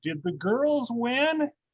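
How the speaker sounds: put-on very high, slow little old lady voice. Recalling late phone calls at home, imitating an old lady's voice. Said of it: "I'd hear this old lady's voice".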